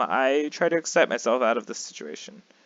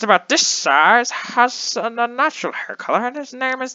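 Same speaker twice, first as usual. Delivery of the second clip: put-on very high, slow elderly man voice; 12 semitones higher, 5 dB louder than usual. Narrating a story, the reader voices a man searching for a kid in an old man voice. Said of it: "talk in my old man voice".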